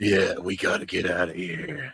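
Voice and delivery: ridiculously deep, gruff and slow voice. Retelling an actor's line from a film role: Adrien Brody ridiculously deep voice. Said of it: "a ridiculously deep voice to come across as, like, rough and gruff".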